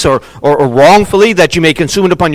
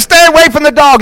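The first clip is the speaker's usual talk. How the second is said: put-on very high-pitched yell; 10 semitones higher than usual. Telling a story about a mom grabbing her kid, retelling a mother's yell. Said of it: "yells at him".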